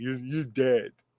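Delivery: put-on soft, mumbled, heavy thick Russian accent. Retelling the boxing-ring scene, the speaker mimics the fighter: mumbly Ivan Drago impression. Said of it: "He said it all mumbly too".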